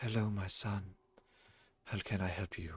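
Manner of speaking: soft, gloomy, mournful and dour tone. A game master voices a character called Father greeting a visitor, sad and dour. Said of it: "he looks like just very sad and dour".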